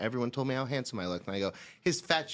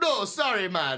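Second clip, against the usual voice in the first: put-on loud, very high, drunk-sounding Jamaican-style accent; 10 semitones higher, 6 dB louder than usual. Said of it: "I'm being drunk [name]".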